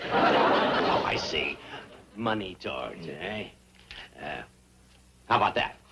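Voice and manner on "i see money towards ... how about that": low, hushed, quiet near-whisper. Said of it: "You're whispering".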